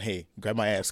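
ordinary talk, nothing marked

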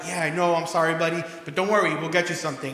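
usual speaking voice

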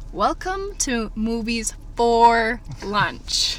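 slow, drawn-out delivery. Repeating the show's welcome so it can sink in, said slowly. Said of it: "I'll say that slowly so it can sink in".

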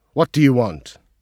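loud, officious, snorted delivery. A colonel confronts a wounded man carried in on a stretcher: officious snorting voice. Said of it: "snorted in his most officious and centaurian voice".

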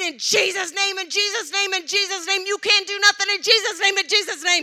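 very loud, high, full-throated screaming. Retelling a threatening phone call, imitating her own screaming. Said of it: "I just started screaming".

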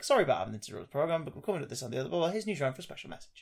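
genial, pleasant, friendly broadcast announcer tone. Describing recorded versions of a Newsround interruption message, said quite pleasantly. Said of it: "saying it quite pleasantly".

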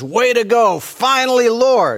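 high, swooping, put-on excited enthusiasm. Speaker retells God calling Moses in Exodus, mock-excited Moses. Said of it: "Moses is all excited and says".

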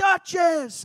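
shrill loud scream.

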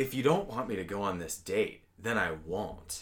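acted-out, guilt-tripping, blaming tone. Quoting a show character talking to her boyfriend: imitating blame-shifting tone. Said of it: "she says it in, like, a way where it's like she's putting it on him".

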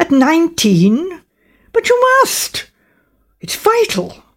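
high, swooping, disbelieving and demanding tone. A young man reacts to a girl's admission, demanding incredulously. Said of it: "demanded the young man incredulously".

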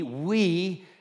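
stress on the word "we". Preaching that people despair without God: stress on WE. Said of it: "emphasis on the word we".

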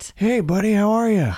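very high-pitched character voice. Greeting another speaker in the Fraser Carter voice: Fraser Carter voice. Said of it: "Your Frasier's gotten so good on The Voice".

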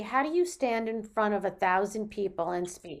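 ordinary delivery

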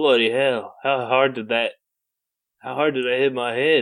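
put-on sudden Australian-accented exclamation. Quoting a movie character who just woke after hitting his head: Australian accent. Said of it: "He became Australian?".

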